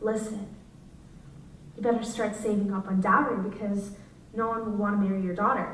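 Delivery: hushed, quiet, grave, serious voice. Retelling a woman pulling the speaker's mom aside, imitating a quiet, serious voice. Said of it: "in this quiet, serious voice".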